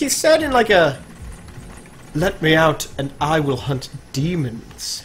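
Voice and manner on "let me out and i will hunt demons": put-on creepy, scary voice. Retelling what a creepy armored game character said to them, in a scary voice. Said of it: "He has a scary voice".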